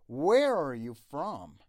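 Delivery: stress on the words where and from. Teaching an english question, with stress on where and from. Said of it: "where و from باید تأکید بشه".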